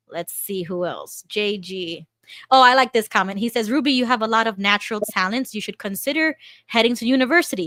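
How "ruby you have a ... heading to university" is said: normal talking voice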